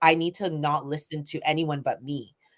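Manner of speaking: normal talking voice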